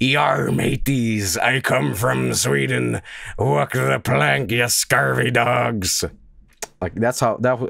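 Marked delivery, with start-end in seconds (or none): 0.0-6.0 put-on pirate voice. Joking about how an Overwatch character sounds, Torbjörn as a pirate. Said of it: "and then Thorbjorn's like".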